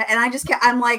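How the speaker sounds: ordinary delivery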